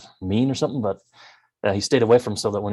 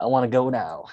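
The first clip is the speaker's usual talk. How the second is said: put-on small child voice; 3 semitones higher than usual. Speaker repeats the line they made for a little kid character, little kid voice. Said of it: "pitched his voice up to make it sound like a little kid".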